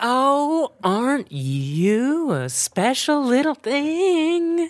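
high, sugary, sickly-sweet syrupy voice. Imagining someone on the mic as a wrestler comes up to the ring, syrupy sweet voice. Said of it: "some syrupy sweet's like".

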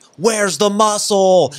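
mock crowd yelling together. Recalling wrestling fans all yelling at one wrestler, retelling a crowd yell. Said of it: "they all just started yelling like".

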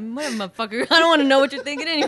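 mock, very loud, angry, fed-up outburst. Imagining how Sarah would get mad and snap back: imitating Sarah getting mad. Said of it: "I can imagine Sarah getting mad".

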